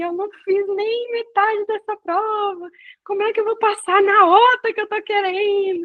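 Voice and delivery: crying, tearful, desperate, high-pitched lament. Retelling coming back to a friend's house after a test: imitating own past crying. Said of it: "E eu chorando, eu falava assim".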